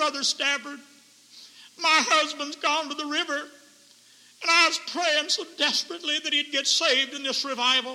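tearful crying voice broken by sobs. Speaker quotes a woman at a revival about her husband, imitating her sobbing. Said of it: "in a sobbing voice".

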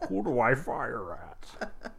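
put-on talking like an old man. Friends role-playing Inuyasha characters; one plays the tank in an old-man tank voice. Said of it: "You kind of sound like the old man got turned into a tank".

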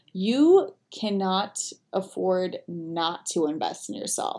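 very slow, deliberate, drawn out word by word. Answering people who say they can't afford a program, said slowly. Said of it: "I said that slowly".

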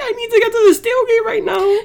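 desperate, high-pitched, laughing, pleading voice.

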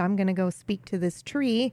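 normal talking voice

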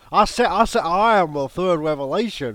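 dark, loud rooster-style voice. Acting a dark Foghorn Leghorn origin story: dark Foghorn Leghorn voice. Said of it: "Foghorn Leghorn's origin story".

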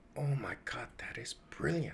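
very quiet, hushed, stunned, awestruck voice. Speaker retelling how he reacted to a sudden idea, retelling his stunned reaction. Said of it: "And I was stunned".

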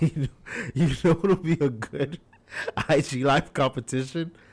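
chuckling with amused laughter. Speaker tells a joke and keeps laughing at it. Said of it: "I'm laughing at my own jokes".

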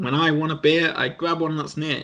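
ordinary talk

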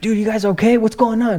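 mock, very high, alarmed, freaked-out voice. Retelling how the manager came in to check on them: imitating Dan freaked out. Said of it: "freaked out".

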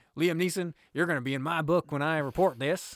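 put-on American southern accent, loud and high-pitched. Retelling what one man says to another, in a southern accent. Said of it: "I said in a southern accent".

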